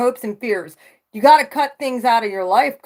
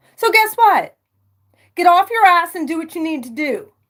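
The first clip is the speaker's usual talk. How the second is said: fired-up, heated, pushing rant, pitched high; 6 semitones higher than usual. Speaker telling listeners to act on what they know: yelling. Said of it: "Sorry, I'm yelling".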